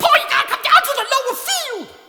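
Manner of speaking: shrill squeak, very high-pitched and loud. Storyteller voices Squeaky Johnson banging on the grub house door for Paul, squeaky voice. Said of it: "Had one of them squeaky voices".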